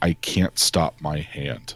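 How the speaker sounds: growling through clenched teeth. A role-play character grits his teeth hard, growling through gritted teeth. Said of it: "you can hear him growling out from his teeth".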